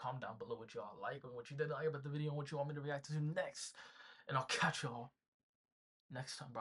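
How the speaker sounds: breakneck, very fast, rattled-off patter. A reaction-video host wraps up the outro to viewers, speaking very fast. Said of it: "I be speaking so fast when I do these outros".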